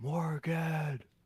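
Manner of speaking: high whisper yell, shouted under the breath. Calling another speaker's name after the mic peaked: whisper yell. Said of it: "I'll whisper yell it".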